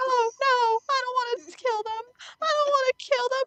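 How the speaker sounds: mock anxious, very high-pitched, distressed pleading. Recalling playing Undertale on stream when chat wanted a genocide run, reenacting distressed pleading. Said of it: "you could see the hear the distress in my voice".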